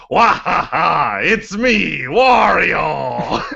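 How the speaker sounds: very loud, high, rough cackling bellow, word drawn out. Retelling a son shouting across the auditorium, very loud Wario yell. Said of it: "very loudly".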